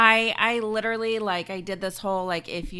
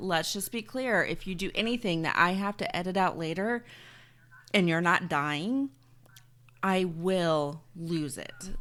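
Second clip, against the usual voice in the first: soft, calm, quiet voice, "will" drawn out; 3 semitones lower, 5 dB quieter than usual. Retelling a warning to the kids, acting out a calm mom warning. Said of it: "I do it in the most calming voice, like so".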